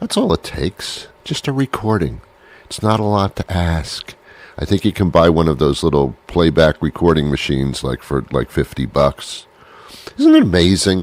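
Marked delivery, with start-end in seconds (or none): 10.2-11.0 pitch rising through "isn't it amazing", peaking on "amazing". Reacting to a price of fifty bucks, voice going up. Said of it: "Listen to how my voice went up".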